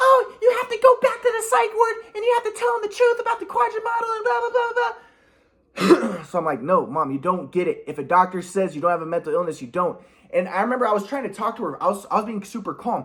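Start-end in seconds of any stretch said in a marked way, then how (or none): 0.0-6.2 very high, shrill, shrieking scream. Retelling how their mom screamed at them, imitating mom screaming. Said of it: "my mom's screaming at me".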